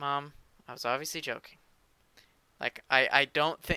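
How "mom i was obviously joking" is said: weary, exasperated sighing voice. Retelling what was said to mom after her correction: imitating exasperated sighing voice. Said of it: "in that sigh voice that you start to use with your parents".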